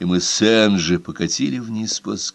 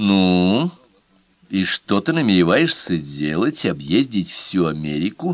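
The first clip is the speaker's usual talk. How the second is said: ordinary delivery, nothing marked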